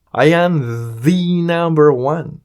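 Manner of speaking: heavy stress leaned on the. Showing how to emphasize something by breaking the rule, stress on the. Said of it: "Y si queremos hacer énfasis en algo, podemos decir the rompiendo la regla".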